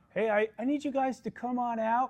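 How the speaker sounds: meek, hesitant tone. Acting out a cop knocking on a door: very passive. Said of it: "if a cop knocked the door very passively".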